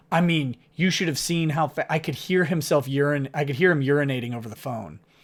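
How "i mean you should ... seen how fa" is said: plain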